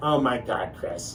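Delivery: plain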